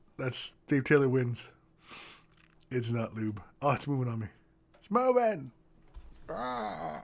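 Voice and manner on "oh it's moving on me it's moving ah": overdone cartoon character voice with swooping pitch. Host doing a voice for listeners to guess, in a Krang voice. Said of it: "what voice I was just doing there ... It's Krang".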